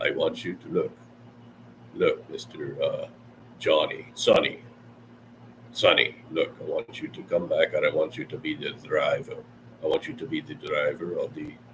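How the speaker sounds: well-defined, breathy, whispery character voice. Showing how Javier talks in a movie: Javier voice. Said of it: "He goes more like this".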